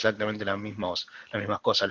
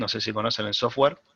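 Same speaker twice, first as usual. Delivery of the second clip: ordinary talk, nothing marked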